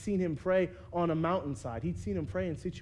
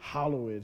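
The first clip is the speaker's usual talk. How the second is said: pious voice with deep bass; 5 semitones lower than usual. Showing how King James Version words should be said, deep, pious voice. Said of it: "you have to say that like real like pious-like ... Like with some bass in your voice".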